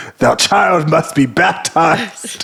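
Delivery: archaic medieval proclamation voice. Describing a man who doesn't mince words, imitating him: Game of Thrones character voice. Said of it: "speaks like um, a character from Game of Thrones".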